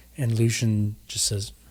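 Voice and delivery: ordinary talk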